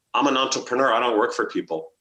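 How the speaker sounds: acted, mock-deadpan delivery. Retelling how the speaker answered people asking them to work for an agency, deadpan reply. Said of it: "I just looked at them deadpan".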